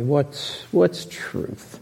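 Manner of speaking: very sarcastic, soft, sneering.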